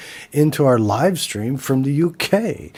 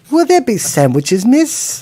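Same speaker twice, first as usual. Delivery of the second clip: loud, high, put-on cockney British accent; 8 semitones higher, 6 dB louder than usual. Playing a chimney-sweep bit after joking that Hollywood is calling: British accent. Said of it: "my British accent is priceless".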